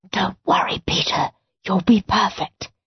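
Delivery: whispering. Narrator voicing a woman urging a boy forward, whispered. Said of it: "whispered Mrs. Oddbod".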